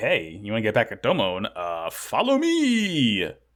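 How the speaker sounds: slow, swooping, teasing taunt with "me" stretched long. Retelling a character taunting people at a table: imitating a taunt. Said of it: "he taunts them".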